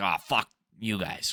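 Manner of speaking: mock sarcastic brush-off tone. Explaining what a posted line means, imitating a sarcastic brush-off. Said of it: "It's like a sarcastic".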